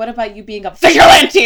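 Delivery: loud mock yell.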